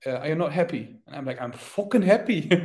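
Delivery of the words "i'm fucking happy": put-on loud Irish accent on the word fucking. Retelling his reply after being told he placed eighth, irish accent on 'fucking'. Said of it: "you say fucking with an Irish accent".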